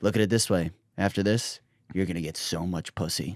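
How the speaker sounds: close, confiding, hushed half-whisper. Retelling what a cop half-whispered in an elevator: imitating a cop half-whispering. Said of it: "the cop whispers in my ear".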